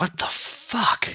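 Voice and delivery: muttered under the breath. In a story, after a back-alley attack, muttering under breath. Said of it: "I kind of mutter under my breath".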